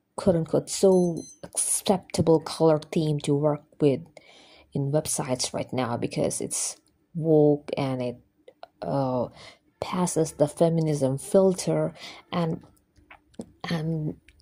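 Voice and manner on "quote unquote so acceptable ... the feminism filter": plain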